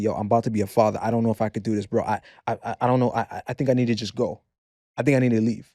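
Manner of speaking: mock, put-on trembling voice. Retelling his own words in a conversation, imitating a trembling voice. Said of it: "the trembling in my voice".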